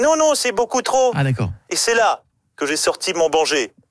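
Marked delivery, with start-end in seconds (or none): 0.0-1.1 tiny, small, squeaky little animal voice. Retelling his loan request, he gives the Caisse d'Épargne squirrel's little voice. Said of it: "avec sa petite voix là".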